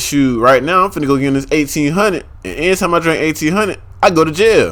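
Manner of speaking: ordinary talk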